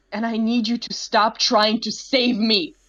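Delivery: half yell. A character grabs the other's wrist, demanding hard conversations; half yelling. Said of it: "in a almost in a bit of a yell".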